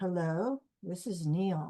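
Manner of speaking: low, soft, slow, gentle voice. Recounting her first phone call to Neale Donald Walsch, low, soft Neale Donald Walsch voice. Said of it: "this man in a low, soft voice says".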